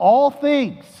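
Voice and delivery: emphatic, loud call.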